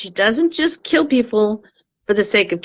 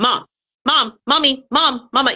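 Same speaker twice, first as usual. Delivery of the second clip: put-on insistent, nagging child voice, high and drawn-out; 5 semitones higher than usual. Retelling how grown sons call out just to harass: imitating sons' insistent nagging. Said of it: "just to harass me, will go".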